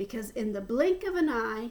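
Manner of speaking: ordinary delivery, nothing marked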